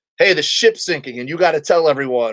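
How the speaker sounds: ordinary talk, nothing marked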